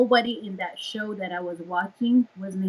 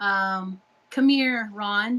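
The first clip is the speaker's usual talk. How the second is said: ordinary talk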